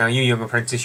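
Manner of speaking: normal talking voice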